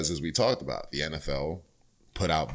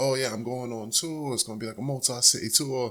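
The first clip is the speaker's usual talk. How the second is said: put-on British rock star voice, higher pitched; 9 semitones higher than usual. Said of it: "my best impersonation of his voice".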